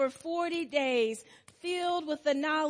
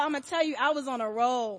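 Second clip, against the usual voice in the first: normal talking voice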